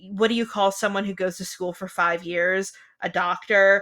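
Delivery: ordinary delivery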